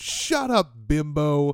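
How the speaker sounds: high, cheesy, corny wrestling-villain shout. Act out the cheesy heel answering a heckling lady in the crowd, imitating DDP shouting. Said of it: "he just shouts out".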